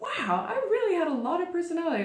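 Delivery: high, fast, surprised, amazed exclamation. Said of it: "I was like".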